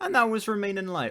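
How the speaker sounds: very high cracking voice. Reviewing an album aloud, naming the record with the voice cracking. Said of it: "Whoa, voice crack".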